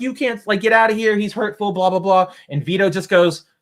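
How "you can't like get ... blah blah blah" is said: screaming shrilly. Retelling how protesters screamed at a man holding a sign: imitating protesters screaming. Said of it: "they're screaming at him".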